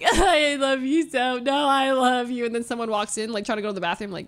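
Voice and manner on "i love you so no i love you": mock very slow, drunken, pleading blubbering through tears. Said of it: "you're a sobbing mess and you're like".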